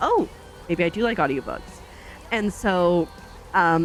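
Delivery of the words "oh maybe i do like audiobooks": ordinary delivery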